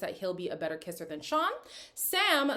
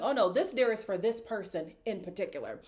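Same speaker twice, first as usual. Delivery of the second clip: plain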